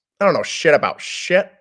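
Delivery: booming, very loud, high-pitched ranting coach voice. Doing an impression of KF starting a team meeting, as the others asked. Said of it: "I'll give you one of his".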